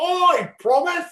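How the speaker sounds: put-on very high, thick British accent. Retelling a crowd repeating a performer's words: thick british accent. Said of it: "you hear this thick British accent".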